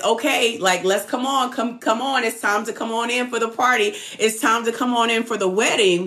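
ordinary talk

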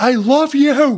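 very high loud yell. Retelling a hugging scene with her in the driveway, retelling yelling it. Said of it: "I'm like yelling it".

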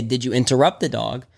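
ordinary delivery

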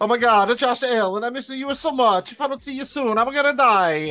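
very high, loud, put-on, yearning lovesick voice. Teasing the other speaker about missing josh allen: mock lovesick longing. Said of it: "just longing for Kay there".

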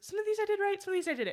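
put-on voice broken by laughter, very high, fast. Retelling what a man said to an unlaughing crowd, imitating him laughing through it. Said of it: "as he's like laughing through that one".

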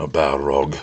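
muttering. Gandalf, hearing that a Balrog has come, mutters. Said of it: "muttered Gandalf".

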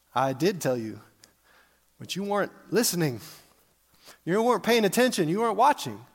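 put-on, mildly sarcastic tone. Retelling a reply to people who keep hounding him: imitating a sarcastic reply. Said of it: "he responds a little bit sarcastically".

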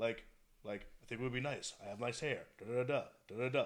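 very low, very soft, uninflected droning monotone. Demonstrating how actors sound when directed to deliver lines in monotone. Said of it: "deliver everything in monotone, no inflection".

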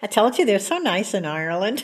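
normal talking voice

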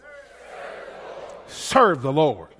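bold, authoritative, commanding delivery. Leading listeners in repeating a phrase: bold commanding way. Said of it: "Say it in a boat, you know, just commanding way".

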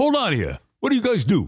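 put-on thick New York accent, high and swooping. Retelling how Mason asked the two friends what they do, use Mason's thick New York accent. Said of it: "in that thick New York accent".

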